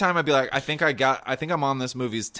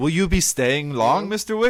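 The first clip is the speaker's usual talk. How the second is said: loud, deep, big baritone; 5 semitones higher, 5 dB louder than usual. Quoting a John Wick scene after praising the actor's baritone: Lance Reddick voice. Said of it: "He has the best baritone in the business".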